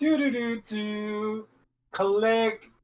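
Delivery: drawn-out do-do-do lock sound. Acting out pretending to lock a door: imitating own lock sound. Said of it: "That was me locking the door".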